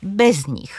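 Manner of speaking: BEZ stressed, nich slow, light, swallowed.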